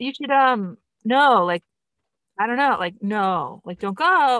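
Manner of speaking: play-acted flustered fumbling. Imitating the actress playing the mom, who doesn't know what to say, mock-flustered. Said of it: "she's just sort of repeating herself and doesn't know what else to say".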